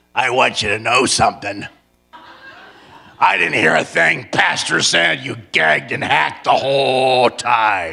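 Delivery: very kind, sweet, loving tone in a low voice. Retelling what a very old woman said to him; imitating a kind, sweet, loving voice. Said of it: "In a very kind, sweet, loving voice".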